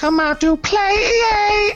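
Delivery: yelling loudly. A game master voicing a character calling out to the warriors, yelled loudly. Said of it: "he did it loud".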